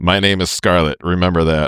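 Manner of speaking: plain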